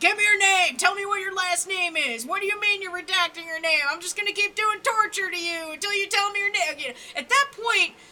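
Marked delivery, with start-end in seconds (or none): 0.0-6.8 relentless yelling, screaming demands. Describing a worst-case scenario, playing a torturer demanding a name; imitating a screaming torturer. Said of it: "they're screaming at you, like".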